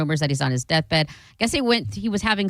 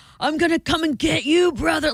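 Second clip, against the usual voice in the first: screaming, pitched very high; 10 semitones higher than usual. Retelling how a wrestler yelled at someone: imitating Hulk Hogan yelling. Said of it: "yelling at someone".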